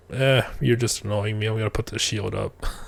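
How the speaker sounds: low, offhand, nonchalant, matter-of-fact tone. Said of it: "it seems so nonchalant".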